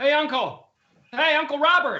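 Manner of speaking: shouting. Calling out to Uncle Robert in a scene, yelling. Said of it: "Why are you yelling?".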